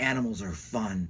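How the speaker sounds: put-on totally deadpan, very low and quiet. Recounting how the piece ends, the speaker quotes its closing line: retelling a totally deadpan line. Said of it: "It's like totally deadpanned".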